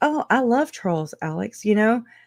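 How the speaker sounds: high, judgmental, talking-down condescending tone. Retelling a message from Janice to Alex: imitating a condescending, judgmental Janice. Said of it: "in a very condescending, judgmental".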